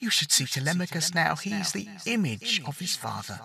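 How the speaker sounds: very quiet, thin, high, stretched, echoing, faraway voice. Odysseus's mother urges him to go home; thin, stretched, distant-sounding voice. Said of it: ""Mother?" ... The voice was hers, but it was thin and stretched somehow, and echoed like it came from a great distance away".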